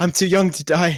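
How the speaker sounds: sobbing in character. Voicing a dying character who gasps his last words: acted crying. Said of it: "and he cries".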